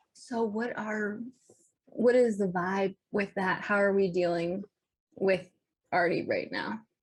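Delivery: speaking low. While another character is busy, a player turns to the group in a lowered voice. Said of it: "lower my voice to the group".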